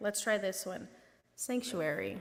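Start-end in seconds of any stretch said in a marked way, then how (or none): 1.4-2.2 soft quiet voice, quieter. Showing listeners how to say the story's cue word: saying sanctuary quietly. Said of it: "quietly say the word sanctuary".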